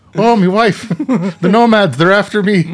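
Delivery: panicked Irish accent, high and loud yelp. Asked to react to a break-in at your house, answer in a Pierce Brosnan Irish accent. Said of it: "can you use that accent in a dire circumstance?".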